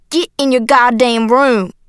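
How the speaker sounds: loud, forceful shouting. Narrator reads a man ordering the narrator into his room, shouting. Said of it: "he shouted".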